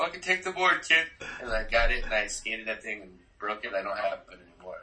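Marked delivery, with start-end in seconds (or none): 0.0-1.1 higher voice, words spoken through laughter. Retelling how a skater held out his board: imitating Penny laughing while talking. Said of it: "he was just laughing at me, like".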